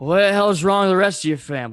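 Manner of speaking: put-on loud, high-pitched drunken yelling. Retelling what a fan in Yankees gear said at a game: imitating a drunk fan. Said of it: "drunkenly goes".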